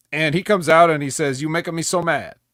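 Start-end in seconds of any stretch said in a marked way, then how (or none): 1.4-2.3 put-on Italian accent. Retelling what Santino Marella said when he came out: Santino Marella impression. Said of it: "a real Canadian Italian come out here, Santino Marella".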